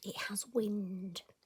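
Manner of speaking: hushed whisper under the breath. Showing stickles to the audience and explaining a quirk of them, whispering. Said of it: "I'm going to whisper".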